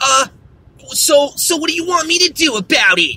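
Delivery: snippy, rude, snotty brush-off tone. Retelling a phone call with a secretary, imitating a rude secretary. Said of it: "She just starts talking hella shit".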